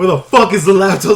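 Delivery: mock, loud, harsh, rough tough-guy voice.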